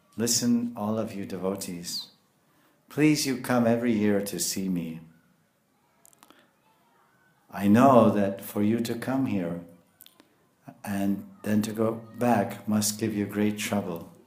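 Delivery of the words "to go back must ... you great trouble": ordinary talk, nothing marked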